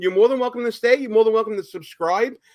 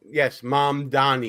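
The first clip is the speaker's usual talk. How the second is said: thick Brooklyn accent, lower pitch; 7 semitones lower, 3 dB quieter than usual. Announcing the next topic on the show: Brooklyn accent. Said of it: "That's my Brooklyn accent right there talking".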